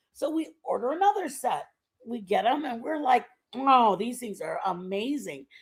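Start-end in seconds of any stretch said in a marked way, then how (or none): none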